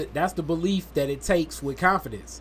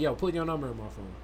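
self-assured, firm, confident, believing every word; 3 semitones lower, 7 dB quieter than usual. Showing how to ask for someone's number, firm, confident. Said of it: "You got to say it like you believe that shit".

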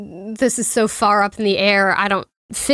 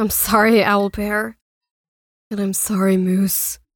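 muttered quietly under the breath. Player voicing Octavia speaking to her companions, under her breath. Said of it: "Under her breath".

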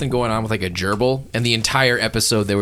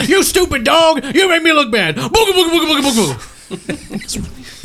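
put-on grumpy old man voice, higher and louder; 6 dB louder than usual. Teasing the game master for sounding grumpy: Eustace voice. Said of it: "You remind me of Eustace".

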